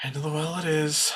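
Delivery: very quiet, hushed under-the-breath mutter. A narrator voices a character who sighs and speaks to himself, under his breath. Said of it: "under his breath to himself".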